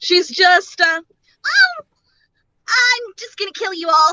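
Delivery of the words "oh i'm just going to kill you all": sweet, lolly-ish put-on character voice, slightly higher, lighter. Showing how a character's voice came to her: Lanessa voice. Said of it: "go a little bit more lolly-ish than normal".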